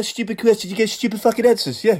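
very high, foul-mouthed, swearing ranting voice. Acting out a manager answering stupid questions, do an impression of a swearing manager. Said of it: "that's a great impression".

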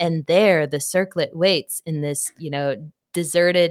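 put-on spooky, eerie narration voice. Switching into a narration voice to set a scene, spooky voice. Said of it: "let me trigger my spooky voice".

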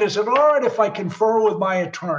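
usual speaking voice

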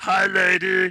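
high puppet character voice. Showing off Muppet voices among friends, doing an Animal Muppet voice.

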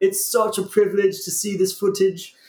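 put-on Australian wildlife documentary narrator accent. Speaker recalls narrating while animals chased and ate them: australian wildlife narrator accent. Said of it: "I had some fun with that accent".

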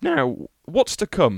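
voice breaks midway, cracking and jumping up high. Podcast host moving on to what's coming next, voice cracking. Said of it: "That was a catastrophic voice break".

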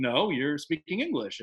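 ordinary delivery

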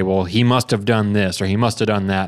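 ordinary delivery

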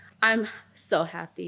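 sarcastic tone. Telling another speaker how they feel right now: sarcastic. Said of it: "don't say that shit sarcastically".

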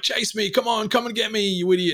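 high, goading, jeering, taunting yell. Retelling a scene where one character yells taunts from a car park: retelling a taunting yell. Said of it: "he's yelling to Bandit".

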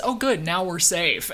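ordinary talk

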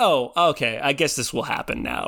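ordinary talk

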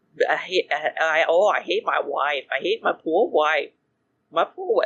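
mocking impression. Teasing the other speaker about how they sound, doing an impression of them. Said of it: "I'm doing an incredible impression of you".

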